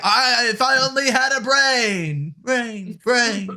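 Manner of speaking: echo on brain. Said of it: "And I'm getting an echo".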